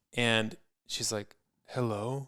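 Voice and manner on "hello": put-on sleepy, tired voice, quieter. Retelling a phone call where the other person just woke: imitating a tired voice. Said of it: "with a tired voice".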